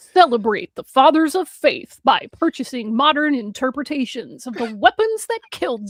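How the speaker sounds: put-on loud, slow commercial announcer delivery. Reading a product pitch aloud, in a put-on announcer voice. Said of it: "let me put on my announcer voice".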